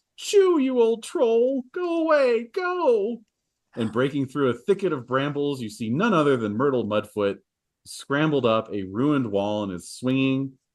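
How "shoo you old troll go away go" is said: very high, drawn-out, slow, panicked cry. A narrator voices a character driving off a troll: Myrtle Mudfoot's high panicked voice. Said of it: "a high, panicked voice call out".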